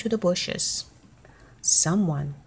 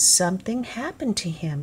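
ordinary delivery

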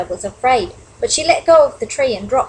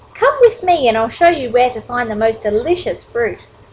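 plain reading voice

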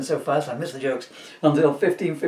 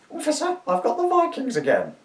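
put-on very high, swooping old crone voice; 10 semitones higher than usual. Retrying the line after giving up on a Norwegian accent, in an old crone voice. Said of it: "shall I do it in my chrome voice?".

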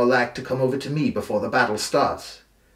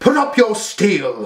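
loud, high, slow, drawn-out shout; 9 semitones higher, 6 dB louder than usual. Brienne, blade in hand, stepping between the brothers, to Stannis: shouted. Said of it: "she shouted at Stannis".

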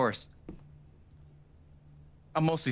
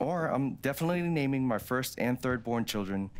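ordinary delivery

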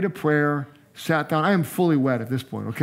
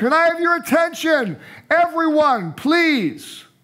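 put-on very high, drawn-out, full-lung yell; 13 semitones higher, 3 dB louder than usual. Retelling getting a packed restaurant's attention: retelling a shout at the top of lungs. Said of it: "at the top of my lungs".

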